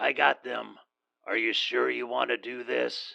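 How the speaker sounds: grizzled, gruff voice with a tinny quality. Burke, an arms dealer, calls a woman on her cell phone; grizzled phone voice. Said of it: "His grizzled voice was tinny through the phone".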